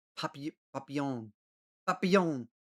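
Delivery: papillon pronounced the French way, French accent. Saying the French word for butterfly: attempted French accent. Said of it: "I'm doing the right accent for it".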